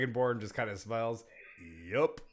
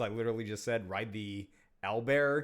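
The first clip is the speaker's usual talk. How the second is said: normal talking voice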